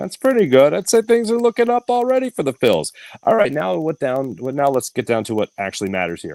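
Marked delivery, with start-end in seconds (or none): 0.0-2.9 very high, falsely upbeat sarcastic tone. Listing small positives after a loss, announced as sarcastic: sarcastically positive.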